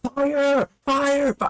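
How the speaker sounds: loud yelling. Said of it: "starts yelling out fire".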